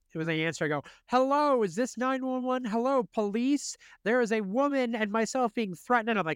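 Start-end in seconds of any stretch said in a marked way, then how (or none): 1.0-6.1 raised, loud, high-pitched announcing tone. Retelling a call to nine one one: retelling a loud phone call. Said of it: "loudly announcing".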